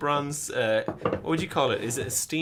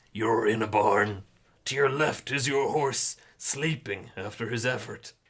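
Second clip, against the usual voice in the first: lower storyteller voice; 4 semitones lower than usual. Reading the game's scene text aloud to the other player: narrator's voice. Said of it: "prepare my narrator's voice for this next bit".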